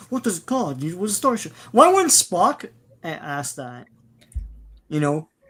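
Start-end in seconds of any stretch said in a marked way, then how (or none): 0.1-1.5 insufferable, pitched-up, high delivery. Mocking a movie captain asking an insufferable question: imitating Shatner's insufferable Kirk. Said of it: "He's like".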